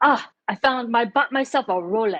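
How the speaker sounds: put-on thick Vietnamese accent. Speaker recalls how a man who passed away talked about his rolex: thick vietnamese accent impression. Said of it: "he had a really thick Vietnamese accent".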